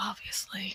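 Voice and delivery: low muttering under breath. Voicing a scoffing character in a role-playing scene: muttering under breath. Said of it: "he'll mutter under his breath".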